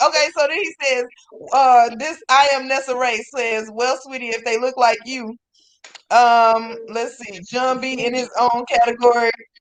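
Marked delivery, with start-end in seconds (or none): none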